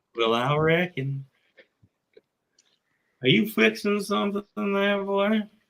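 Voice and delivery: put-on Texan accent. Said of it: "we just both drew Texan".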